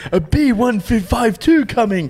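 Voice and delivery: put-on excited train nerd voice, high, slow, sing-song gushing.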